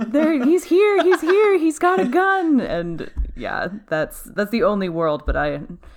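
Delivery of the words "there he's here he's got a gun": mock scream, much higher and louder. Imagining a phone call, the speaker acts out the caller: imitating a scream. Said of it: "just screaming at him like".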